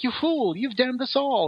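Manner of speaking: very high, terrified, frightened witch voice. Retelling how a woman voiced one face of a two-faced witch: put-on afraid witch voice. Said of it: "pretend to be like this this witch that was really afraid".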